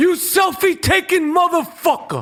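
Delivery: shrill, very high-pitched, spat-out contemptuous cursing. Doing an impression of Danny Aiello cursing out a selfie-taker: Danny Aiello impression. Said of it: "That's my Danny Aiello from Do the Right Thing".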